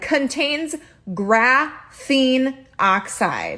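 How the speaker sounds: yelling tone, emphatic but kept mild. Reading a label aloud to the audience, yelling. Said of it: "I'm yelling".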